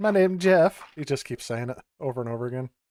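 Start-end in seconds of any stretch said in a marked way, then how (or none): 0.0-0.8 high, fake Spanish accent, laid on thick. Retelling a movie scene while playing a game: Channing Tatum's fake Spanish accent. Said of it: "Channing Tatum pretends to, uh, have a, a Spanish accent".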